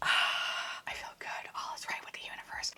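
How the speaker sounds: soft, hushed whisper, barely voiced. Admiring a new headband while getting ready, whispering. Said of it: "Why am I whispering?".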